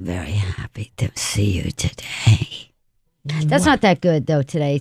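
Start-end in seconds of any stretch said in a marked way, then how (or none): 0.0-2.7 very low, slow, frightening, creepy put-on voice. A guest, asked by the host to do the voice again, performs a scary put-on voice. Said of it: "Can you do the voice?".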